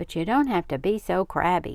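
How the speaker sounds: plain reading voice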